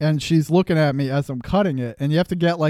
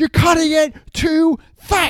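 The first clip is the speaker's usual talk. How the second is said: very high-pitched, screaming, scolding yell; 12 semitones higher, 4 dB louder than usual. Retelling how a woman behind the counter yelled at the speaker, imitating a woman screaming. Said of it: "She's screaming at me from behind".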